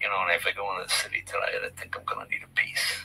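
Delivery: hushed, teasing whisper spoken aside. Retelling teasing the wife in a Cadillac backseat: retelling a whisper. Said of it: "I just kinda whispered her".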